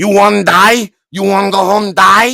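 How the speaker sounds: put-on very loud, high-pitched older village woman voice. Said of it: "I do respect when I make voice".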